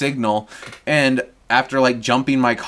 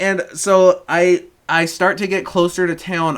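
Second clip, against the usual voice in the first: ordinary talk, nothing marked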